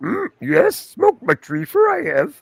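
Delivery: very high, stoned-sounding little puppet sage voice. Speaker says they do a good Yoda impersonation: stoned Yoda voice. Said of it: "do a good Yoda impersonation".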